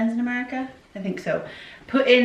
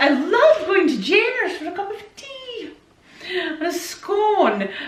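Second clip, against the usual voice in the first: fake Scottish accent, high, slow, "scone" drawn out; 9 semitones higher than usual. Showing the fake scottish accent the family jokingly does. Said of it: "if you do like a fake Scottish accent like that".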